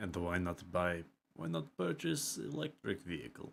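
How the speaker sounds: Russian-accented English, put-on, throughout. Playing a character who reaches into his pocket and glances at the player; russian accent. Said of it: "Why did your accent change midway through?".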